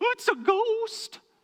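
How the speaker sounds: very high, so-so cartoon-style voice. Voicing the disciples' first thought on seeing Jesus on the water, Shaggy impression. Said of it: "that was a pretty average Shaggy impression".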